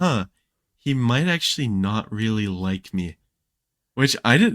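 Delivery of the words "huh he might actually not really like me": ordinary delivery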